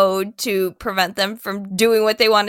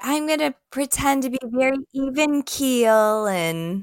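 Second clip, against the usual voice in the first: put-on sympathetic voice, higher pitch; 4 semitones higher, 4 dB quieter than usual. Imitating how Erica's voice changed this season: imitating Erica's sympathy voice. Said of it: "a sympathy voice".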